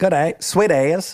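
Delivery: high-pitched put-on New Zealand accent. Recalling New Zealanders who taught them to canoe, imitating a New Zealand accent. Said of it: "That's what they say a lot in New Zealand".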